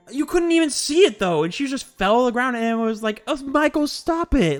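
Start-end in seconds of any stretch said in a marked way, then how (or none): 3.2-4.6 acted, lightly teasing, playful, high and drawn out. Retelling a movie victim's line: imitating a playful delivery. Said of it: "playfully saying it".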